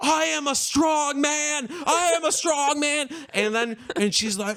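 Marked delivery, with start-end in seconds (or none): 0.0-3.1 slow, high, drawn-out, acted yell. Retelling a performance where the performer takes off a gag: imitating a performer yelling. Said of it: "she's yelling".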